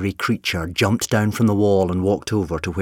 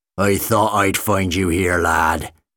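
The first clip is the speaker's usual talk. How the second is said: low, gruff, menacing growl. Reading a story as Uncle Bob enters the inn and finds Jim, growled. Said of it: "he growled".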